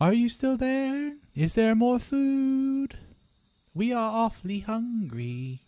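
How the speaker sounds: high, slow tiny-creature voice, "food" drawn out. Voicing tiny creatures circling a hut and begging for food: voicing tiny hungry creatures. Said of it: "these tiny little creatures come out".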